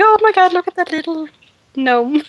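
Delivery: bright, pleased, cheerful voice. Describing a character's discreet warning in a game, in a happy voice. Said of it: "in a happy voice".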